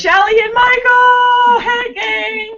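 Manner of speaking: very high, drawn-out, shrieked hello. Reading viewer comments aloud, imitating a viewer screaming. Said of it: "And then she screams".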